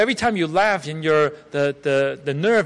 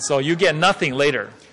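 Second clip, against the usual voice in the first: ordinary delivery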